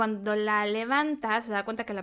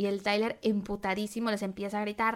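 ordinary talk

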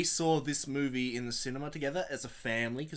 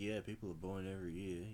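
mock very low, disinterested, flat monotone drone; 7 semitones lower, 11 dB quieter than usual. Describing how a man sounded, imitating someone bored. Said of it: "He sounded, you know, kind of, you know, bored, like".

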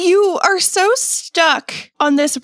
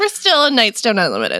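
ordinary delivery

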